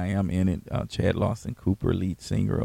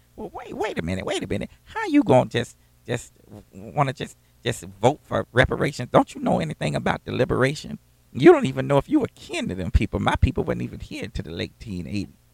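put-on woman's voice, higher pitch; 5 semitones higher than usual. Telling a story, the speaker acts out what a woman said: doing her voice. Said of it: "I'm doing her voice now".

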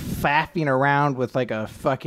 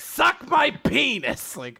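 very high, wildly swooping voice; 13 semitones higher than usual. Joking about a mentor character, slipping into Frank Reynolds impression. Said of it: "getting a little bit of, uh, Frank in there".

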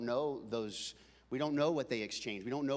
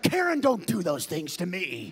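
put-on, very loud, high-pitched, mad angry yelling; 6 semitones higher, 10 dB louder than usual. Retelling how he got mad at the speaker's mom, imitating a man's angry scolding. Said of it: "he was mad at my mom".

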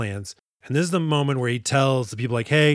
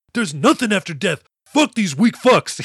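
loud, pitched-up, wild, angry outburst; 6 semitones higher, 5 dB louder than usual. Retelling a film scene where a wild character scorns the farmers: imitating an angry outburst. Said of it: "He's just pissed off at farmers".

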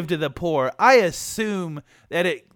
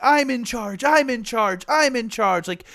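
tearful, wailing, sobbing cry-yell; 4 semitones higher than usual. Describing a movie's archery scene, imitating cry-yelling. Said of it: "cry yelling".

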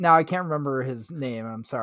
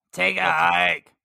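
put-on rough, creaky, rasping character voice; 4 semitones higher, 3 dB louder than usual. Repeating a quoted line about stuntmen in a Necessary Roughness voice. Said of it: "I was doing my necessary roughness voice".

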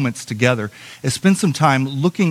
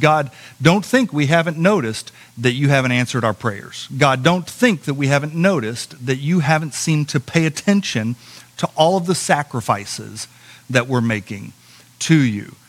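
ordinary delivery

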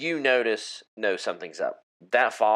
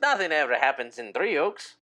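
smiling voice, much higher; 5 semitones higher than usual. A game master voicing a man whittling a stick, answering a player, smiling. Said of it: "He looks at you and smiles".

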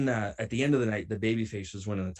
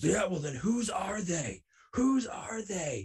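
very high-pitched, accusing, demanding scream; 10 semitones higher than usual. Retelling a man who pulled pills from the speaker's bag, demanding whose they are: retelling a scream. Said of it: "And he's screaming at me".

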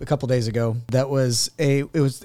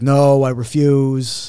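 droning, flat, downcast, dejected monotone; 4 dB louder than usual. Acting out how people refuse, in a mock-dejected monotone. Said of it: "they also say it in a very kind of like monotone or dejected way".

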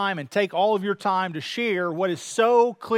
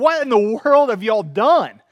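put-on loud, exuberant exclamation; 6 dB louder than usual. Retelling a lawyer's reaction to a guilty verdict: imitating a loud exuberant outburst. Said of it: "an exuberant, loud voice".

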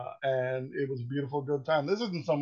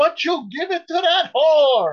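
put-on very high, loud, shrill old-lady Italian accent; 14 semitones higher, 11 dB louder than usual. Retelling a scene where the killer, denied the Eucharist, speaks: old lady Italian accent. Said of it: "in her delightful old lady Italian accent".

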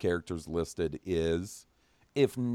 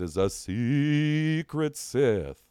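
slow, eerie spooky voice, "secret" stretched out; 6 semitones higher, 3 dB louder than usual. Rereading an email line as the email asks: spooky voice. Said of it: "Can you say that in a spooky voice?".

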